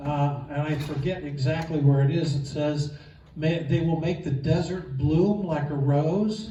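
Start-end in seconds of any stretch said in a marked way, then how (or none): none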